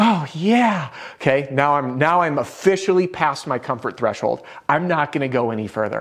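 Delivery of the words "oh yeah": amorous, lovey, pitched-up romantic moan. Showing the phrase as a more romantic moan: higher-pitched romantic moan. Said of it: "an even higher voice".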